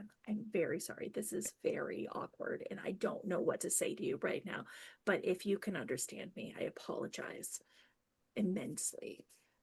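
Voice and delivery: hushed, very quiet, breathy, barely there whisper. In a role-play, whispering an apology to another character. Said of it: "I'm like whispering to Ransom".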